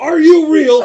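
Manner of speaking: close, confrontational yelling. Voicing a dwarf king who marches up to an elf: yelling right in someone's face. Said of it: "he's gonna yell right in your face".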